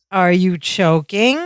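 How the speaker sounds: mock heavy sarcasm, very sarcastic. Retelling a scene where Balky answers a man who fell, retelling a very sarcastic line. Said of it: "Very sarcastically".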